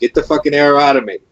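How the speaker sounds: loud yelling, shouting out. Role-playing a character shot with a silver arrow, yelling at another character. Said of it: "and I'm yelling at no name".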